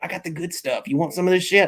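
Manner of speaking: sneaky, hushed, conspiratorial stage whisper. Imitating a friend sneaking someone to a party corner: imitating someone half-whispering. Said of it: "he's, like, whispering and shit".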